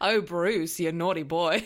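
put-on, fake Australian accent. Joking about Finding Nemo with a co-host: put-on Australian accent. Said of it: "The Australian accents have started".

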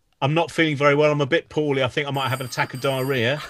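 normal talking voice

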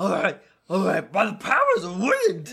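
swooping, sing-song cartoon dog voice. Speaking as a polymorphed character as the others laugh: Scooby-Doo-like voice. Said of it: "Are you Scooby-Doo?".

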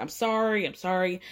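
put-on tearful, crying voice. Retelling how she started crying and apologized: imitating someone crying. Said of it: "And then she starts crying".

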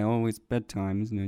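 mumbled dog voice. Acting out what the dog says at bedtime, in a mumbled dog voice. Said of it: "I love how he mumbles it as well".

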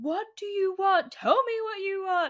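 very high, loud shouted yell. Acting out the scene in The Notebook where he's at her, imitating Ryan Gosling yelling. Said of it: "He's like yelling at her".

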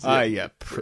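put-on mumbled delivery. Retelling a movie cameo where Freddy curses as a door closes: Freddy mumbling. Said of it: "you hear Fred mumbling".

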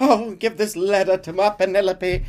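high, slow voice sounding lovestruck and lovesick. Retelling a mission where Beau asks Arthur to deliver a letter: Beau's voice. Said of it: "if that's Beau's voice".

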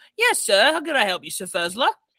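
animated, swooping tiny gnome voice. A snap of the fingers summons a little gnome, who answers in a little gnome voice. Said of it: "a little gnome shows up and goes".

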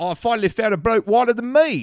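loud, high put-on British accent. Retelling a British man's remark at the bar, in a British accent. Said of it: "said in a British accent".

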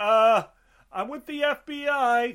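high, slow mock naive voice.

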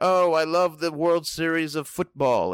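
slow, drawn-out, put-on British accent. Mocking a British-accented colleague who uses wrong sports terms: imitating Tom's British accent. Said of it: "he has a British accent".

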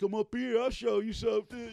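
very high, loud, hollered scream. Retelling how jail convicts screamed back at the group: imitating convicts screaming. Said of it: "they're screaming back at us".

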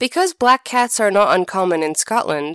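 plain reading voice

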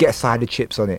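plain

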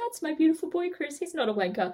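distressed, doting mother voice. Imitating a guest's mum defending her son: imitating Robin getting upset. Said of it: "who will probably be getting upset going".

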